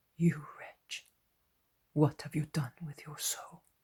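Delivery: quiet whisper. Reading aloud a scene where one figure rebukes another: whispering in a low voice. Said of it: "he whispers to him in a low voice".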